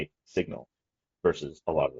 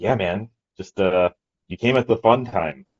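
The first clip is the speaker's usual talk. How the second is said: slow, drawn-out sarcastic aside; 3 semitones higher, 6 dB louder than usual. Retelling what a crypto bro said at dinner: imitating a sarcastic remark. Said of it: "there's the sarcasm".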